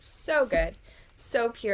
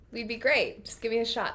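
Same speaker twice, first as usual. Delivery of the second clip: ordinary delivery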